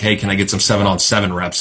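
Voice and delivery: plain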